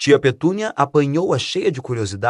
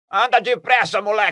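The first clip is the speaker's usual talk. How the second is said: high-pitched, loud yelling shout; 7 semitones higher than usual. Reading aloud Uncle Walter calling from the kitchen, shouting. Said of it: "gritou tio Walter da cozinha".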